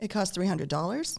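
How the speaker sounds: Ontario upswing, rising pitch on final word dollars. Describing the Ontario accent, telling someone a price: rising end like a question. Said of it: "ends on the upswing ... It sounds like a question".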